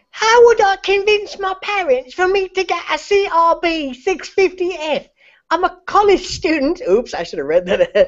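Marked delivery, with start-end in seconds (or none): 0.2-6.8 put-on little boy voice, very high and slow. Reading someone's question aloud, the speaker uses a little Timmy kid voice. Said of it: "before doing little Timmy voice".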